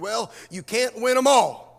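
fed-up, exasperated tone. Quoting what people usually say after losing: imitating an exasperated tone. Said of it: "said in an exasperated tone".

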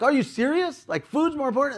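agitated very high outburst. Retelling confronting a guy hurrying to the lounge, replaying own agitated outburst. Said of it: "my tone's up, I'm agitated, a little louder".

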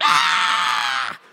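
loud, creaky dragon screech, roaring.

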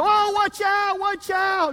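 acted, very high, sudden, drawn-out scream. Retelling a joke where the husband suddenly warns his wife: imitating a sudden scream. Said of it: "he just screamed".

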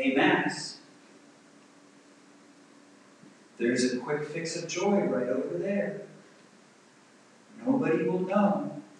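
low, coaxing, enticing tempter voice. Voicing one's own flesh tempting toward a quick fix: acting out a tempting voice. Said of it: "My flesh tells me, it tempts me".

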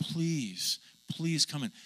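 earnest, insistent, pleading, begging voice. Retelling a story, the speaker voices a man begging the son: imitating begging. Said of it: "it said he literally was begging".

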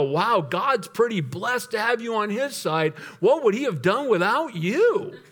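mock, openly sarcastic, over-praising delivery. A pastor recounting a reply to someone listing their deeds; retelling a sarcastic remark. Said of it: "they don't even catch the sarcasm".

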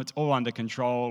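normal talking voice

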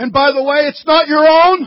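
military drill instructor manner. Speaker quoting scripture to listeners: drill instructor voice. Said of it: "Does it sound like my drill instructor?".

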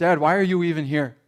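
normal talking voice

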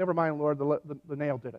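normal talking voice

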